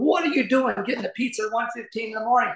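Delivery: high-pitched, scolding scream. Retelling his wife bursting from the bedroom at their daughter, retelling a scream. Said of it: "screaming at my daughter".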